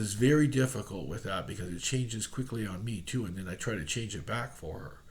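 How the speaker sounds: normal talking voice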